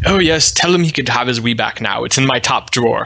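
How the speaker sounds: atrocious, fake, put-on English accent. Retelling an English coworker overheard on the phone, bad English accent. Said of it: "Worst English accent ever".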